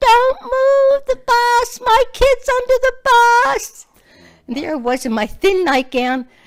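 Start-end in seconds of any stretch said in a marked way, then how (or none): 0.0-3.9 very high, shrill, loud fishwife scream. Retelling the morning her son slid under the bus: imitating her own screaming. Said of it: "like an old fishwife, was out there screaming".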